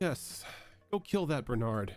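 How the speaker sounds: speaking through laughter. Voicing the judge, who laughs, urging someone to kill Bernard: judge laughing while talking. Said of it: "you hear the judge laugh, and he's like".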